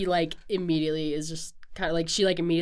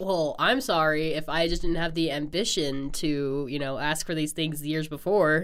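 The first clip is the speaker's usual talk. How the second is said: ordinary talk, nothing marked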